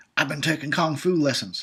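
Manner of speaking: poorly done, put-on horror-villain voice. Commenting on a movie fight scene, shitty Freddy impression. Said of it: "That was my shitty Freddy impression".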